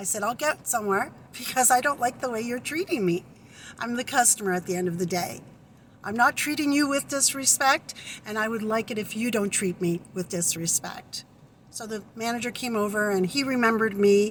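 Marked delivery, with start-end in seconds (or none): none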